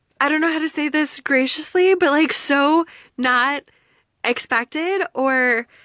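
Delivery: high, loud thrilled gushing. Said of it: "so excited".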